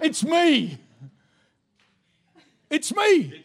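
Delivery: fervent, impassioned, high and swooping voice. Acting out a Bible scene, repeating a line after a prompt: with more passion. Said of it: "Say it with more passion".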